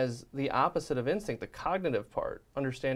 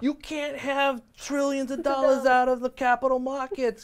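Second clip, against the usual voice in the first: put-on panicked voice, higher pitch and louder; 12 semitones higher, 6 dB louder than usual. Imitating a pundit freaking out on national tv: imitating a panicked pundit. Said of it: "freaking out on national T V".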